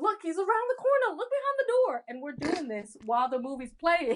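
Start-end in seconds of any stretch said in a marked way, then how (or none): 0.0-2.0 mock, very high, loud shouted yell. Retelling how viewers yell at a horror movie: imitating yelling at the screen. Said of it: "yelling at the screen going".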